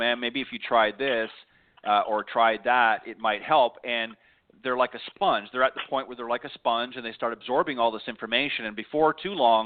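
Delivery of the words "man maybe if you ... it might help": ordinary talk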